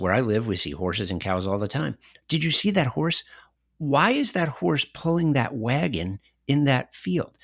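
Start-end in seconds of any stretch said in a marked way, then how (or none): 2.3-7.2 put-on soft sing-song baby-talk voice. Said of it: "then you turn to your toddler ... and say".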